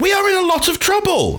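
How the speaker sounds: high, ranting, mad shout.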